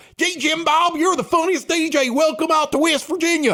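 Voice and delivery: very high, gushing, thrilled excited voice. Retelling what late-night radio callers said: imitating excited callers. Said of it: "they'd be all excited".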